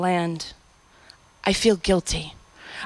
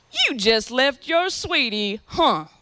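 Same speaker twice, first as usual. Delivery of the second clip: put-on slow, drawn-out Southern accent. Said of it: "with that collard green accent".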